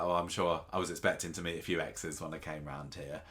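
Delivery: normal talking voice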